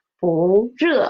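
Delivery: 不 lifted into a rising second tone. Mandarin lesson on tone change before a fourth tone: rising tone on 不. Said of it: "because it is before a fourth tone syllable 热, so it will change to second tone".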